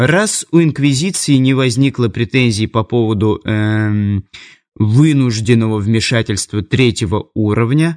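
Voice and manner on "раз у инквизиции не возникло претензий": ordinary delivery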